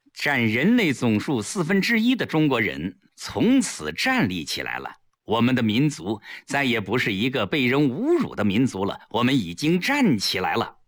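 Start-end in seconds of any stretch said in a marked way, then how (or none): none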